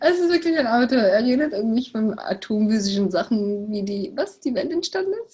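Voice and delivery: talking while cracking up laughing. Translating the other speaker's physics talk into German, laughing while talking. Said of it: "ich kann nicht aufhören zu lachen".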